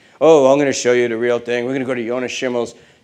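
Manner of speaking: ordinary delivery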